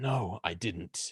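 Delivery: hoarse voice. Voicing a suspect answering a priest's questions: hoarse voice of Dusk. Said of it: "hoarse voice of Dusk".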